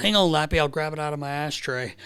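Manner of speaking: plain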